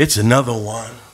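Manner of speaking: quiet put-on voice.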